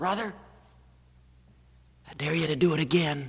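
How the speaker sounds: hushed stage whisper. Speaker retells an old lady in the front row speaking up, in a stage whisper. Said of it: "she said in a stage whisper".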